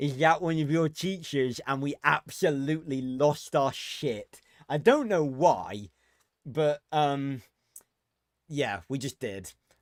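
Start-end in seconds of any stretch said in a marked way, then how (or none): 0.0-1.6 mocking, stupid-sounding put-on voice. Retelling mocking a friend on Discord: stupid voice imitating Jason. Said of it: "I did a stupid voice impersonating him and mocking him".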